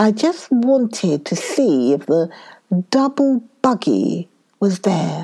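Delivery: ordinary delivery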